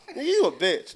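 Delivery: loud, high-pitched, tough street-bully trash-talking tone. Acting out a bully provoking a man who walks in with his girl: trash-talking bully.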